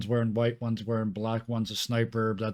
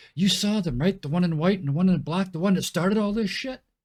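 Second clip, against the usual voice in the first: loud, raised, high-pitched carrying voice; 8 semitones higher, 5 dB louder than usual. Speaking to the people nearby so the local cops can hear, loud voice. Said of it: "say in a loud voice so it's loud enough for the local cops".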